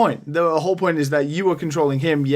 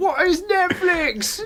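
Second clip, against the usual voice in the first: put-on screaming, pitched higher. Retelling a scene of him alone in his room: imitating someone screaming.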